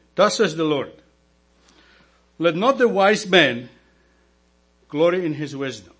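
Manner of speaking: very slow, deliberate reading. Reading a scripture verse aloud to listeners as instructed: reading very slowly. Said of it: "Read it very slowly".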